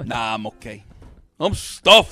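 loud, put-on TV-style mobster accent. Quoting a line in a favorite put-on accent: Sopranos accent. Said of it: "That's my favorite accent".

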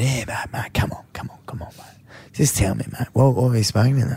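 mock serious, straight delivery. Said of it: "he put on, you know, the straight voice".

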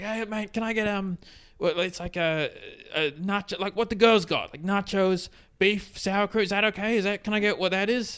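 manic, wound-up, acted-out rambling, pitched high. Retelling a guy walking up to the counter to order, imitating crazy energy. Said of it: "the same kind of crazy energy".

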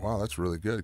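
ordinary talk

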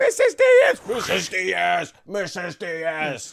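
repeated high screams, stretched out long. Acting out a student calling the teacher in a flashback: screaming. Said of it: "He's just screaming".

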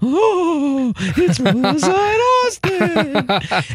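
spooky ghostly voice, very high and very slow. Retelling a prank where she read lines in different voices: imitating a ghost voice. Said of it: "Ghost was one of 'em".

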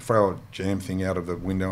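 ordinary talk, nothing marked

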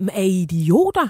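mock incredulous outburst with swooping, jeering pitch.

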